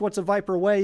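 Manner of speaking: ordinary talk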